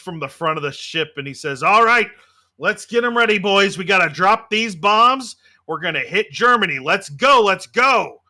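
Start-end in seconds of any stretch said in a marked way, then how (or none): 1.6-8.1 put-on loud American accent, commander-style calling voice. Telling a story, the speaker voices an arriving cigar-chomping American flight commander. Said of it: "a cigar chomping American flight commander".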